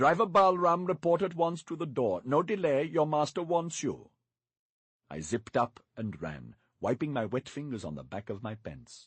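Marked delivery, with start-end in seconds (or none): 0.0-4.1 pompous, stern, self-important, high. Mister Turpin calls the driver over the hotel gate microphone, pompous stern voice. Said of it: "speaking in the most pompous, stern voice possible".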